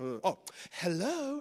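low, put-on telephone answering voice. Showing how the speaker picks up a call: phone voice on hello. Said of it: "I have a phone voice, you know, so I'm like".

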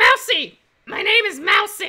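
a little gruff character voice. In a comic scene, asked for a name, Mousy insists: gruff Mousy voice. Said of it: "Mousy's getting a little gruff".

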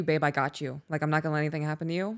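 plain

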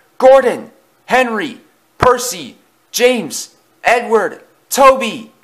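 shrill, very high, drawn-out screaming. A frightened engine, eyes shut, calls to the other engines; screaming. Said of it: "clamped his own eyes shut and screamed".

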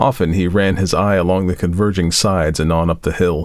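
plain

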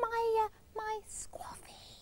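slow, soft whisper.

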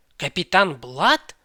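sudden, loud, astonished, startled outburst. Narrator reads his lordship's startled reply to Miss Bishop: surprised exclamation. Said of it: "вигукнув він".

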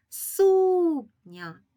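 first syllable су of сукня pushed harder. Calling out a word to find its stress: stress on су in сукня. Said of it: "з більшою силою голосу ми вимовляємо перший склад".

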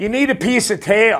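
mock yelling. Telling a joke, the speaker quotes a wife calling to her kite-flying husband, retelling a yell. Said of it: "she yells out to him".

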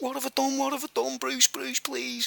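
high, soft, mock pleading, almost crying. Speaker retells what a man said to him, imitating someone almost crying. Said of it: "he was almost crying".

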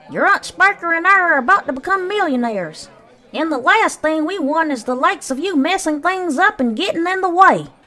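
sharp, shrill, very high, loud scolding snap. Aunt Sponge answers the one offering help with the tickets, snapped. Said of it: "Aunt Sponge snapped".

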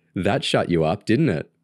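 ordinary delivery, nothing marked

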